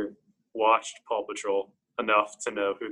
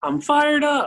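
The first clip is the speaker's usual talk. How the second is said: put-on very high, loud ten-year-old kid voice; 7 dB louder than usual. Repeating a quoted line for a friend, in a 10-year-old kid voice. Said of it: "You gotta have like a 10-year-old kid voice".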